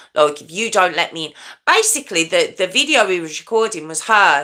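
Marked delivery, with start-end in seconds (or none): 0.4-1.3 mimicked brutal, manipulative, threatening tone. Retelling a girl's threats at a door: imitating a brutal manipulative tone. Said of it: "manipulative, just brutal tone".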